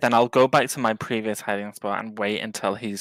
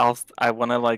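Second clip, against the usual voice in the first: plain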